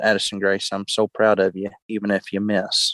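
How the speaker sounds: put-on whispered words. Retelling what was whispered to a young hunter before the shot: retelling a whisper. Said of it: "I just remember whispering to her".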